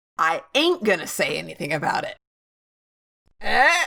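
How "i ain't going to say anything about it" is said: put-on rebellious, defiant, sarcastic bravado. Delivering a deliberately ungrammatical line after a big buildup: mock rebellious sarcasm. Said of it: "That was sarcasm, folks".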